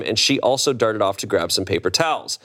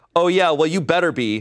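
put-on yelling, higher pitch; 6 semitones higher than usual. Telling a story of a confrontation, retelling a woman yelling back. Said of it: "She started yelling back".

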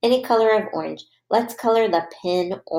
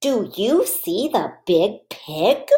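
rising, lifting intonation on "pig". Speaker reads a sentence aloud for a listener to follow along, in a question voice. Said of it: "read this question sentence with a question voice".

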